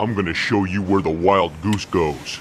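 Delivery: deep voice. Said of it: "We hear a deep voice say".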